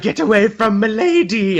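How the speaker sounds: high, protective voice with pitch lifted. Retelling a comic scene where Otto warns someone off: Otto voice. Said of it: "I love your Otto voice".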